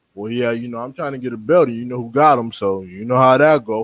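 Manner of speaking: play-acted reluctant, flat, unenthused, unexcited tone. Retelling how a boxer talks about a fight: imitating unexcited Lomachenko. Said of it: "He don't sound excited".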